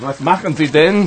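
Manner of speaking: sounding annoyed, irritated. Voicing King Ludwig's doctor as the king pulls him into the water; annoyed. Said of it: "King Ludwig's doctor is pretty annoyed".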